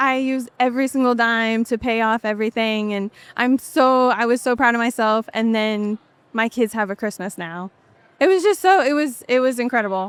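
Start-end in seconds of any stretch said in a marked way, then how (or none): none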